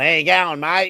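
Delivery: put-on thick, broad, full-on ocker Australian accent. Describing how someone talks, imitating Steve's broad Australian accent. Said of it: "way more Australian accent than me".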